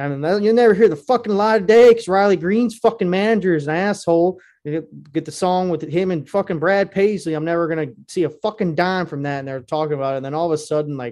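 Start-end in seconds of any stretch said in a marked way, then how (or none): 0.0-9.4 loud, griping, put-on Southern accent. Retelling a man overheard at a bar: imitating Southern accent complaining. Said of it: "he has a Southern accent, but he's, like, bitching".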